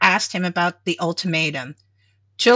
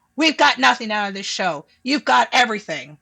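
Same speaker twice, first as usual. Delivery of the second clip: snarling, sharp and faster delivery; 3 semitones higher than usual. Narrator reading Chick's retort during a quarrel over the show, snarling. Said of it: "and snarling".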